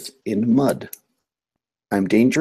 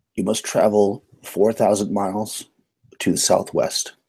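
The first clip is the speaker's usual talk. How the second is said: ordinary talk, nothing marked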